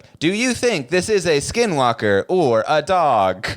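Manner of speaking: mechanical, machine-like robotic narrator voice. Describing skinwalker videos, the speaker mimics the TikTok text-to-speech voice. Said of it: "you hear the TikTok voice though too".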